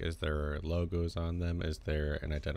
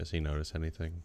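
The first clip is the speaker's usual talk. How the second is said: usual speaking voice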